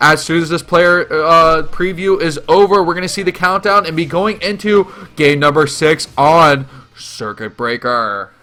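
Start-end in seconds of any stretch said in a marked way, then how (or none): 7.0-8.3 very low, hushed, deep announcer tone. Announcing game number six after the countdown, in a low tone. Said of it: "that low tone for Circuit Breaker".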